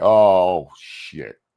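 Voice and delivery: acted frightened, scared, dismayed, sudden cursing. Imitating a man who sounds scared: imitating someone sounding scared. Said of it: "how scared he sounds".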